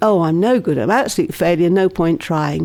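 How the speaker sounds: usual speaking voice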